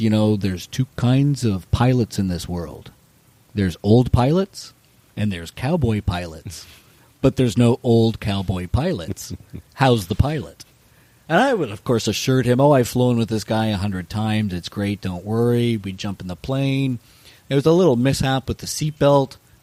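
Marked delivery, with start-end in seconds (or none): 0.0-10.6 put-on cool, laid-on Dutch accent. Quoting a Dutch film-crew member who came up to the speaker: cool Dutch accent. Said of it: "says in a cool accented voice".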